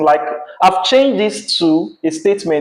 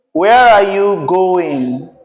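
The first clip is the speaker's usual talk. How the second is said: pitch drops at the end, on going; 3 dB louder than usual. Student reads a practice question aloud in an intonation lesson: falling intonation.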